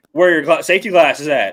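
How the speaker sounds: acted, pointed, needling sarcastic tone. Retelling what Brandy asked while he worked on his doors, mock-sarcastic question. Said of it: "Like real sarcastically".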